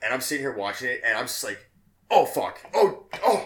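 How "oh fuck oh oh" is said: very loud, high, shrill, slow, drawn-out outburst. Retelling own reaction to a graphic hallway scene: retelling loud exclamations. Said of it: "I'm being really loud".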